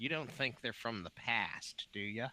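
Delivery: mock secretive, conspiratorial tone, like an aside. Voicing a character who leans in to ask: mock conspiratorial tone. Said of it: "kinda faux conspiratorially".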